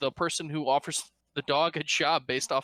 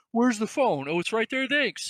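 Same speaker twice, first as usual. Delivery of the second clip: muffled, pitched-up voice, as from behind a wall; 7 semitones higher, 3 dB louder than usual. Describing a movie scene, the speaker voices an off-frame character in a muffled voice. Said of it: "it's just this muffled".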